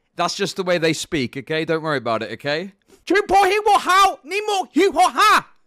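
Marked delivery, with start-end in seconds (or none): 3.1-5.4 angry, shrill, very high, very loud put-on Vietnamese accent. Acting out a friend greeting the audience: imitating Tom Zoo, angry-sounding put-on accent. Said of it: "the accent, it sounds like he's angry".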